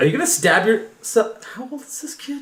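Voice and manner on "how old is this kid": very soft, quiet muttering under the breath. Asking in character how old the kid is: said under her breath. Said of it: "She says under her breath".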